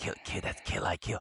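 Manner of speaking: hushed, quiet whisper. Retelling what people at school whispered to each other: imitating people whispering. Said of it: "whispering to the, each other".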